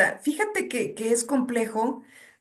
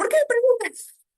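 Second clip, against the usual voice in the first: very high, loud, agitated, raised voice. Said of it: "con un tono de voz, eh, elevado".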